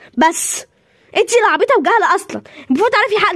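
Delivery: loud, forceful shouting. Scolding another character for not knowing: yelling at her. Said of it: "ما تزعقلهاش".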